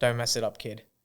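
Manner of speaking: low, dead-serious, grave tone. Retelling an actor's first words on meeting: Liam Neeson voice. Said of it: "Liam Neeson voice".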